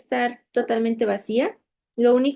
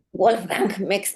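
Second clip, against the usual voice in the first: put-on German accent, much lower pitch; 3 semitones lower than usual. Asked to say a german psychologist's name in a german accent. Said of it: "Dilo con acento alemán".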